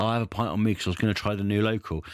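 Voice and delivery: ordinary talk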